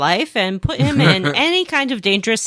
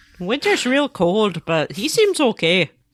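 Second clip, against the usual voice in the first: put-on Wisconsin accent, played for fun. Joking about townsfolk who talk like Wisconsin: put-on Wisconsin accent. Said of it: "here I am doing it".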